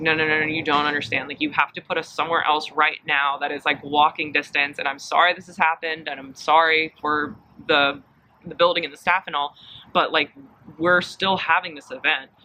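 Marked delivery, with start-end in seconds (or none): none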